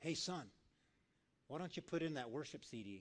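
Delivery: still small voice. Acting out God speaking to someone driving: still small voice. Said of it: "that still small voice".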